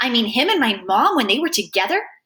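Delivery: ordinary delivery, nothing marked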